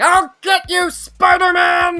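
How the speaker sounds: shrill, booming, loud, high, slow, drawn-out bellow. Joking about a character with pink bows, J. Jonah Jameson impression. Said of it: "That's the best impression I can do there".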